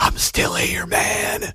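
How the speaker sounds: slow, unhurried, drawn-out put-on whisper. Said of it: "I'll do my Biden whisper".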